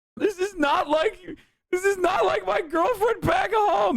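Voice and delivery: very high-pitched fake crying and sobbing. Acting out a soldier overseas missing his girlfriend back home: mock crying. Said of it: "you're crying after you fuck the prostitute".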